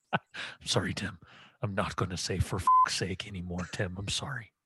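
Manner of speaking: low, put-on borrowed voice. Imitating a manager apologizing: imitating Brendan Rodgers. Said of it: "I miss that impression so much".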